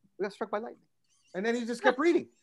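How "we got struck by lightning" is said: mock hushed, very quiet, unbothered, matter-of-fact calm. Retelling a plane scare, quoting the seatmate's reply: imitating a calm passenger. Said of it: "he very calmly just took his eyes off the newspaper".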